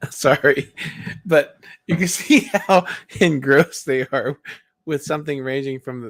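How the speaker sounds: talking through laughter. Reacting to a video with another speaker, laughing while talking. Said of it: "I'm sorry I'm laughing".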